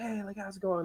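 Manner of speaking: play-acted, overly nice, super friendly, pitched way up. Retelling the greeting of the man selling cards: imitating someone all smiley. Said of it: "all smiley".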